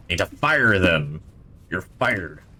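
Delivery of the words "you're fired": put-on cartoon pirate captain voice. Playing a game, blurting a joke line in a pirate voice. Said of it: "Don't know why I said that in, like, a pirate voice".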